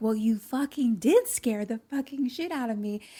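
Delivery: mock unhinged, freaked-out, out-of-control outburst. Retelling what a woman told Luke after he scared her, imitating someone losing it. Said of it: "she's like losing her mind".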